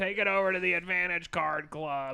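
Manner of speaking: imitated woman's voice. Retelling what casino staff told them, imitating the lady from the nineties anti-smoking commercial. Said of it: "It's ran by the lady from the nineties".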